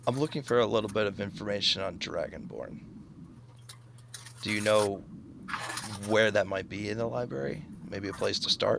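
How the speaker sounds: low, hushed voice. Role-playing, leaning in a little to ask the other character a question: lowered voice. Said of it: "I lower my voice".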